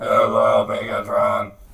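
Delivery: put-on robot character voice. Asked by another speaker to do the mascot's voice, Soundwave voice. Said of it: "Can you do his voice, Soundwave?".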